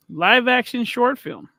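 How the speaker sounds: slow, deliberate reading pace.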